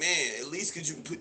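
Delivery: put-on wheedling, pleading, begging tone. Retelling a man's words to a woman: imitating a man begging. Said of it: "this man is begging this woman".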